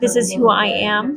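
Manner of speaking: usual speaking voice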